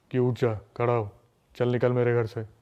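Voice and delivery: put-on deep, possessed-sounding man's voice from a girl.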